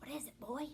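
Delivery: hushed, breathless, half-whispered voice. Narrator half-whispers to the dog Rowdy as it picks up a scent: half-whispered. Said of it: "I whispered".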